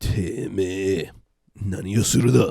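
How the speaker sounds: threatening gangster voice. Drinking on an anime radio show, trying a line in a threatening Yakuza voice. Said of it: "I could probably do like a threatening Yakuza voice".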